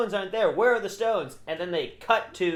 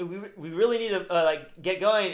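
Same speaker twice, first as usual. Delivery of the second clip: normal talking voice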